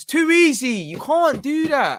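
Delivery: loud, high-pitched shouting.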